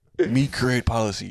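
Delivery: put-on caveman voice. Imagining the press rewriting Obama's quotes the same way: caveman voice. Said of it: "imagine if the press did that with Obama".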